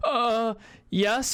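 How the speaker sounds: high-pitched, nervous, on-the-spot sounding reply. Retelling a reply to a cop during a traffic stop: imitating own nervous reply. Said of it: "I'm so nervous that the cop thought".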